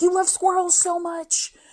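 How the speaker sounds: acted slow, stretched-out, high accusing yell. Retelling how she screamed at her husband about the squirrel, retelling a scream. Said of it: "And I'm just screaming at him".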